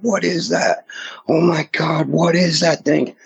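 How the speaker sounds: play-acted, very high screaming outburst. Retelling how a companion in the car screamed at the creature: imitating Andy screaming. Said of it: "He's screaming".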